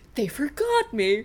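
snarky, sassy cartoon talking-cat voice. Fan quotes a beloved cartoon cat's line, imitating the sassy cat. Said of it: "whenever he's like".

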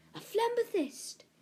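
gasp pitched very high, like a cry. Narrator reads Dev's line as a small rock glows before him; gasped. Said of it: "gasped Dev".

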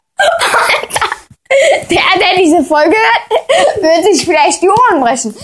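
laughing through the words after screaming.

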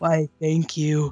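voice dropped way down, extra low. Imitating how Eric answers compliments: imitating Eric's extra-low voice. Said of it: "he'll make his voice go even lower".

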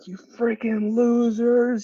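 very high, shrill, aggressive yell. Retelling a man atop an apartment building yelling at passing riders, retelling a stranger's yell. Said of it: "was like yelling at us".

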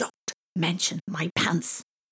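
urgent, pressing, secretive stage whisper. Reading Thomas's line to Isabella on the field, in an urgent whisper. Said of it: "said Thomas in an urgent whisper".

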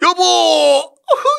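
high, loud sobbing wail at full voice.

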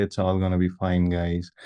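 calm, serene, tranquil yoga-teacher voice. Retelling a calm coworker during a stressful project: imitating a calm yogic tone. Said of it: "in a yogic tone".

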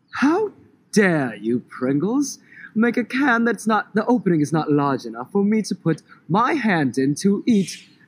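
put-on affected British accent. Giving a made-up example of a funny complaint to a chip brand, in a British accent. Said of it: "He did it in his amazing British accent".

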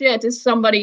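ordinary delivery

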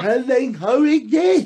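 silly put-on voice. Posing a question aloud, then remarking on it, in a daft voice. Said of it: "I say it in a daft voice".

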